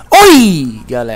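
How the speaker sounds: very loud, intense voice. Explaining wave amplitude, the speaker greets everyone as a loud greeting. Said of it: "Tá vendo que eu falei mais alto com você?".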